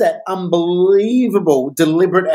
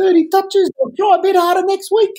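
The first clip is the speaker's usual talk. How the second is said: very high, laid-back put-on New Zealand accent; 13 semitones higher than usual. Acting out a player's reply after a game, in a put-on New Zealand accent. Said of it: "his heritage is Kiwi".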